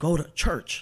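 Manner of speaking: stern, firm, commanding, authoritative male voice. Recalling a man's voice heard in the ear: imitating a low, firm man's voice. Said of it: "it lowers his voice".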